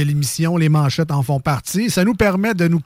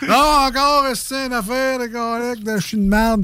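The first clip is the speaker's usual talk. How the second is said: mock whiny complaining voice, much higher pitch; 6 semitones higher than usual. Retelling how a man read newspaper headlines aloud in the kitchen, imitating someone whining. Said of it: "il chiolait".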